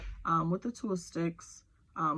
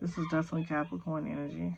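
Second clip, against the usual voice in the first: rushed, fast talking. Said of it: "I'm talking too fast".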